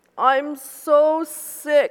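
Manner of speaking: groaning, high, loud moan. The narrator, feeling very sick, complains: moaning. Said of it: "I moaned".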